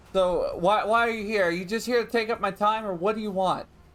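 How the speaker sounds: put-on thick Boston accent. In a scene, a character asks a visitor why they're here, thick Boston accent. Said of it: "very thick Boston accent".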